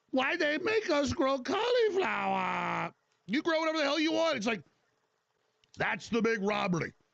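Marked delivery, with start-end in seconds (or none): 0.1-4.4 comic put-on Chinese accent, pitched up. Mocking a complaint about growing cauliflower: put-on Chinese accent. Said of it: "Now I'm doing a Chinese accent".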